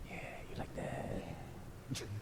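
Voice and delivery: slow, soft, unvoiced creepy whisper.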